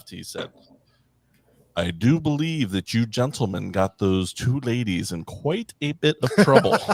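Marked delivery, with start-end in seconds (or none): 1.8-6.8 light imitation of a big, booming-voiced man. Giving a toast, quoting the man who changed the tire: Mister Seto Henry's booming voice. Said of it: "he had this booming voice".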